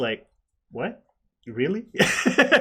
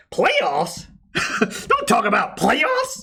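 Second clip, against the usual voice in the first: very high, swooping outburst, voice jumping up; 10 semitones higher than usual. Quoting a famous playoffs rant, speaker imitates the man's voice going high. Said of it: "that funny was his voice got high".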